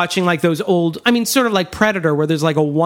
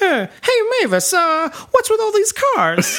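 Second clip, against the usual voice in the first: mocking, needling tone, pitched very high; 13 semitones higher than usual. Retelling a talk-show host mocking a rival: imitating David Letterman mocking Jay Leno. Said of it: "I remember him once going".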